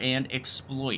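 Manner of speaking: "exploit" slow, stretched and stressed. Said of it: "Emphasis on exploit".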